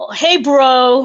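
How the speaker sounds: put-on New York accent with "bro" stretched long. A fan tries the greeting as the New York one, in a New York accent. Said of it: "that would be more for the New York one".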